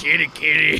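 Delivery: copied way of saying it. Repeating a candy name the way the trucker in the video says it: imitating the trucker's pronunciation. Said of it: "the way he pronounces these fuck-ass candies".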